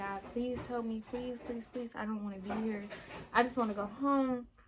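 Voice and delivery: acted tearful pleading. Retelling sitting in a friend's car afraid of jail, re-enacting past crying pleas. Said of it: "and I'm just crying".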